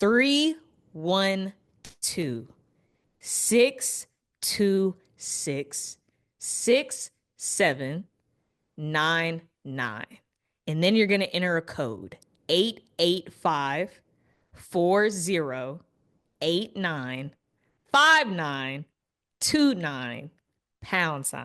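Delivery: very slow, deliberate, drawn-out digit-by-digit reading. Host reading the hotline number aloud to viewers, very slow. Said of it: "I'm going to say it so slow".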